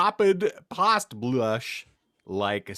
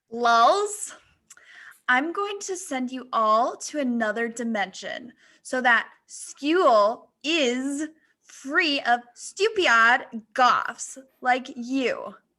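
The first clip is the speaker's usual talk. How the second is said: put-on very high, girly preppy-girl voice; 10 semitones higher than usual. Narrator reading a girl's taunt to the goths, in her girly preppy voice. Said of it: "her girly preppy voice".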